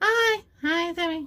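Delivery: put-on squeaky, very high, loud little-kid voice. Showing off character voices, the speaker plays a child voice. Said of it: "Or I can play child".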